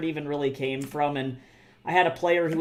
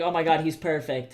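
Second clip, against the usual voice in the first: put-on delighted voice. Imitating an author pleased with a vampire figure: imitating Anne Rice delighted. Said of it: "She'd be like".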